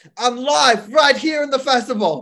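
put-on Australian accent, very high and very loud. Pretend to be Will greeting the guys live from the festival, as a Will impression that sounds Australian. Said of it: "Why do I sound Australian?".

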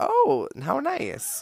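thrilled, delighted, voice pitched way up. Retelling an answer to a stranger abroad: imitating own excited reply. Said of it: "just excitedly".

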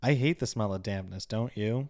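fast delivery. Quoting a film character's line about the smell of dampness: imitating a line said fast. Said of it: "he says it so fast".

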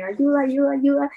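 put-on woman's shout. Retelling a story where a woman runs in: imitating a woman shouting for help. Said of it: "gritando así".

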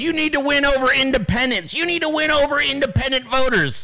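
put-on high, cranky, ranting old-man holler. Recounting Stuart yelling at the woman on with him, retelling Stuart's yell. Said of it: "He's yelling".

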